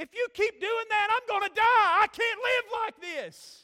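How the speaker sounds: high, dramatic, exasperated shout. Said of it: "I hear him go".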